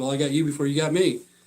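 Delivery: normal talking voice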